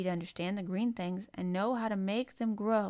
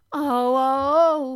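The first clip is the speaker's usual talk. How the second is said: very loud, high-pitched cry of delight; 6 semitones higher, 13 dB louder than usual. Colin, told that Dickon will visit tomorrow, cries out in delight. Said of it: "cried Colin out in delight".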